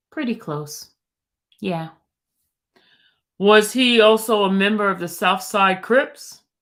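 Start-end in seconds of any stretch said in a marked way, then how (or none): 3.4-6.4 put-on deep voice, louder. Reading out a question from testimony: put-on deep voice for the questioner. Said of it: "If my voice is kinda deep".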